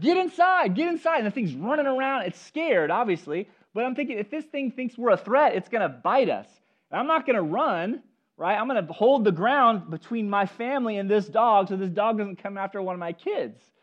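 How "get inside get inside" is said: mock, very high yelled shout. Retelling warning the kids about a dog: imitating own yell. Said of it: "so I started yelling".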